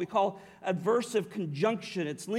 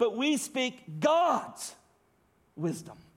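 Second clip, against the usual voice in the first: God's strongly stressed, emphatic weight; 4 semitones higher than usual. Reading a verse where 'god's' is emphatic: strong stress on 'god's'. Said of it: "you read it this way. ... It's emphatic".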